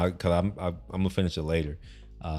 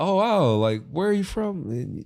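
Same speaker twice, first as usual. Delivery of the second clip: put-on broad, thick Boston accent with very high pitch; 11 semitones higher than usual. Speaker from texas retells what boston locals said to them: imitating a thick boston accent. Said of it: "in their accent".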